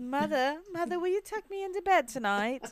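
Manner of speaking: put-on British accent. During a joking chat, the speaker slips into a fake British accent. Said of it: "acting like I'm British".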